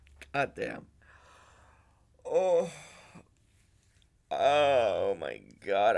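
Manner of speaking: crying while talking. Thanking viewers for their support after succeeding: crying while talking. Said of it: "I did not think I was gonna cry during this".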